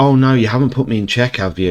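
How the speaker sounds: put-on sarcastic voice. Advising chess beginners, the speaker imitates an advanced player, mock-sarcastic. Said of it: "they'll be like sarcastic".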